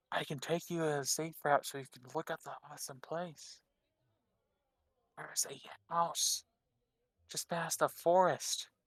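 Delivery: hushed, gentle, close-in whisper. Voicing a crouching character offering a safe route: gentle whisper. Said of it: "like gently whispering to you".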